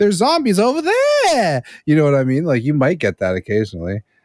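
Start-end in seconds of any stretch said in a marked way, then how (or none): 0.0-1.6 very high pitch, swooping and jumping all over. Discussing an actor's movie delivery, the speaker does a Mark Wahlberg high-pitched impression. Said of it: "the like Mark Wahlberg high pitch".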